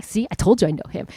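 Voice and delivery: ordinary talk, nothing marked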